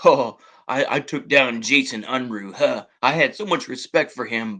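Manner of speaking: mock-arrogant, put-on arrogant voice. Imitating a critic claiming he took someone down: arrogant imitation of Pierre Trudeau. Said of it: "very arrogantly".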